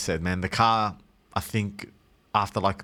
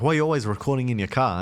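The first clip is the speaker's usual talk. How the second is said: normal talking voice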